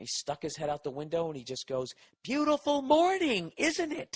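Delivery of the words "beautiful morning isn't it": put-on yelling, higher pitch. Retelling how an old neighbour shouted at them: imitating a neighbour yelling. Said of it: "Why is he yelling".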